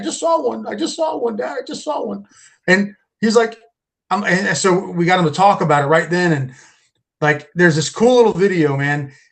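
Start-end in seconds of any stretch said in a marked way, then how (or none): 0.0-2.3 put-on sobbing, tearful, high child's voice. Retelling what a crying son said after seeing something: imitating a crying child. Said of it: "I get up and he's crying".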